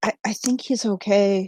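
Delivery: soft, hesitant half-whisper, stumbling on "I". Speaking in character to Arg after checking Solmaris: half-whispering in character. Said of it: "just kinda whispers it".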